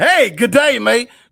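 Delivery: overly friendly, loud, slow, overfamiliar voice. Mocking how Chris greets people from outside Washington, D.C.: imitating Chris. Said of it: "he like".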